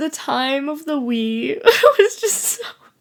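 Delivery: slow, tearful, fake sobbing.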